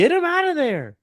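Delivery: mock yell, very high and loud.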